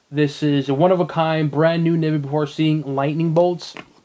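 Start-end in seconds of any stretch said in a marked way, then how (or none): none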